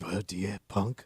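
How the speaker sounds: put-on gravelly voice, English accent. Retrying the impression as advised: raspy voice with English accent. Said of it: "I'm impressed by that".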